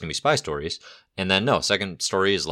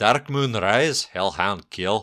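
bad fake Scottish accent; 2 semitones higher than usual. Correcting how someone said a comic's title, in a bad scottish accent. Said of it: "our Scottish listeners who I just offended".

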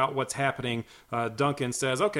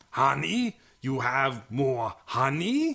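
slow, dim, drawn-out bug-creature voice. Recapping a scene, voicing the Tycons in a Ram Man voice in bug form. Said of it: "it's the Ram Man voice, but like in bug form".

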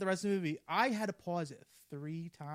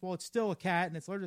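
normal talking voice

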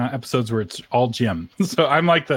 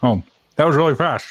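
talking with mouth full, higher; 2 semitones higher than usual. Host eating ice cream live on air, reacting to a listener message, talking with mouth full. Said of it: "You sound pretty good with your mouth full".

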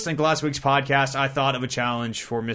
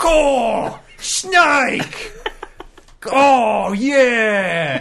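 very high, very slow fake Australian accent; 10 semitones higher, 7 dB louder than usual. Imitating a co-host jumping into the conversation: fake Australian Swag voice. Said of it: "fake Australian Swag".

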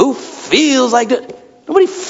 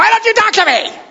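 acted shrill, high-pitched yelling; 11 semitones higher than usual. Speaker acting out a wife yelling at her husband, imitating a wife yelling. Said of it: "I just yell at him".

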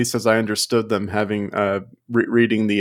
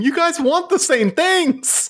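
high-pitched yelling. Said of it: "were yelling at the screen".

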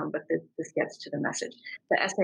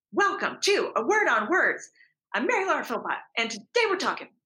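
sped-up yell, very high-pitched; 9 semitones higher than usual. Retelling freezing while introducing a guest: imitating own yelling. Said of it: "I'm yelling".

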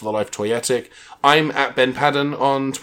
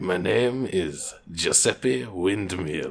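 put-on, vague Eastern European accent; 7 semitones lower, 6 dB quieter than usual. A character insists on their name to a doubter, some sort of Eastern European accent. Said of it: "you're speaking in some sort of Eastern European accent".

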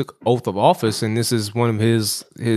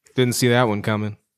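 normal talking voice

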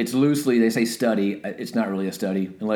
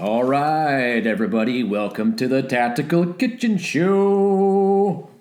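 big wrestling ring-announcer voice, "show" drawn out; 4 semitones higher than usual. Welcoming everybody to the show in a WWE announcer voice. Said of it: "That was my WWE announcer voice".

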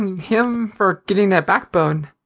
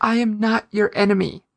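usual speaking voice

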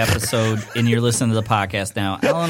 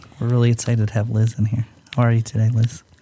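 on-air public radio interviewer style voice. Radio co-hosts trying different radio voices, greeting a guest in an NPR voice. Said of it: "if you've ever listened to NPR, it talks like this".

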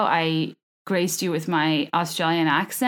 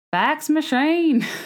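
Australian accent with pitch raised very high; 9 semitones higher than usual. Showing how a phrase is said in Australian: Australian accent. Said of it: "how you say fax machine in Australian".

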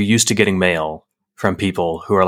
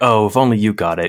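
mock sneering, condescending preacher-style pity. Mocking sneering pastors on college campuses: imitating a sneering pastor. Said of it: "those kinda sneering pastors".

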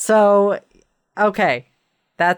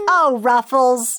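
put-on pitched-up little boy voice; 7 semitones higher than usual. Chatting with co-hosts about a dog, the speaker says its name in a little boy voice. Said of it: "That's my best little boy voice".

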